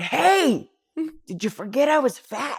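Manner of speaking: calling out in a high, loud yell. Retelling getting lost upstairs in a guy's mansion, retelling a scream. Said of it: "scream out".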